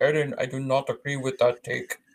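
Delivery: put-on Austrian-German accented impression. Imagining Arnold in his mansion disagreeing with Eden, Arnold impression. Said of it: "He sits in his mansion just sitting there going, ... Your accent".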